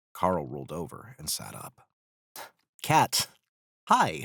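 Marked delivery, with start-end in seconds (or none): 2.8-4.2 jittery, uneasy, nervous, high-pitched and raised. A character greets another who just rolled onto the deck, nervous. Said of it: "Carl said nervously".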